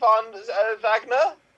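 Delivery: bad, very high, put-on German accent. Showing the accent bit they do to entertain family at Christmas, in a German accent. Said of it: "Do a bad English accent and then transition to my German".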